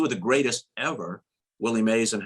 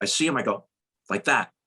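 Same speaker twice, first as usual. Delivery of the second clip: ordinary talk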